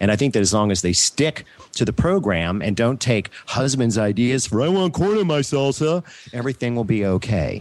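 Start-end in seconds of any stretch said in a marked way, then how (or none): 4.6-6.0 uncanny, pitched-up everyday voice. Talking about home canners, speaker imitates a husband's demand: impression of a husband. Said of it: "That was an uncanny impersonation".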